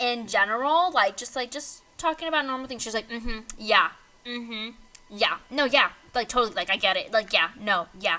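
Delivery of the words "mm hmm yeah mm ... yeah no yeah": mock condescending, dismissive tone. Acting out how she answers him when he talks to her, mock-condescending. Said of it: "Condescending. ... with an attitude".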